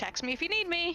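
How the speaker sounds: very high, loud, high-pitched call-out. Calling back to the group while walking away: loud exclamation. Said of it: "loudly exclaim".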